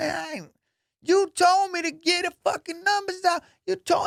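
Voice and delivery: put-on, very high, heated, angry arguing. Retelling a security guard arguing back at the lady: imitating an angry argument. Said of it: "they're arguing in front of everybody".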